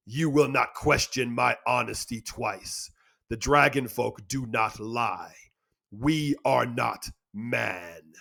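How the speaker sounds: thundering, booming, contemptuous dragon voice, drawn out. Narrator reading a dragon's speech to a man in a story; booming dragon voice. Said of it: "she boomed. / He saw 2 bright sapphires floating in the air before him, each one as big as his head. They emanated a smoldering glow. They bathed him in blue, otherworldly light. Son of [name], the dr".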